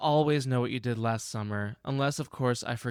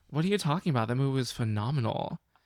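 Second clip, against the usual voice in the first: normal talking voice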